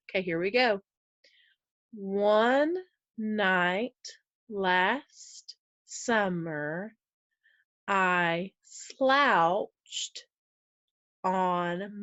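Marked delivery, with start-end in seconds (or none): 1.9-12.0 very slow, deliberate delivery, "on" drawn out. Reading a passage aloud for a class-style exercise, reading very slowly. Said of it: "I'm reading it really, really slow".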